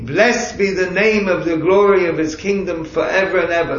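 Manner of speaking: ordinary talk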